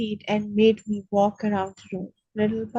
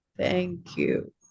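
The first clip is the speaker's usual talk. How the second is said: very slow, drawn-out, hushed, breathy near-whisper; 4 semitones lower, 6 dB quieter than usual. Narrator voices the first-person character thanking the man who lifted him, very slow monotone. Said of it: "I said in a very slow monotone".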